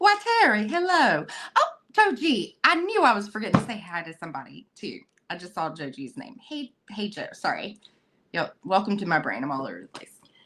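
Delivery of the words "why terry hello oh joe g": put-on Southern accent, pitched very high. Greeting someone from the chat: put-on southern voice. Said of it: "I'm turning on my Southern voice for you".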